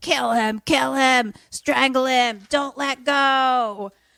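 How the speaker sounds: high, slow evil-doll cry, "go" drawn out. Retelling a movie scene as the head screams orders: screaming Chucky voice. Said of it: "The Chucky voice from the head is, like, screaming".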